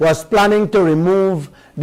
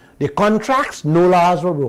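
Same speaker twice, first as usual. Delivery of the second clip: normal talking voice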